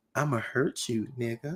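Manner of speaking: nice, pretty-sounding voice. Demonstrating the same threat in two tones, the second in a pretty voice. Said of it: "in a pretty like voice".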